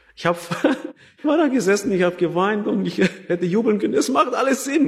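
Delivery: high, fast joyful laughter.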